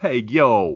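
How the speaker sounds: put-on New York accent. Joking about punching down, slipping straight into the go-to New York accent. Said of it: "I immediately go to the New York accent".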